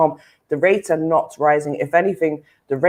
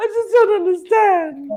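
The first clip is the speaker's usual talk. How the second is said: fake tearful voice, higher pitch. Going into Karen mode while the others tease: mock-crying Karen act. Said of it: "when I go into Karen mode".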